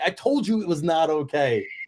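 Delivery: high, yelled shout. Retelling how the man they cheered yelled back at them, retelling a yell. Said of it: "he starts yelling".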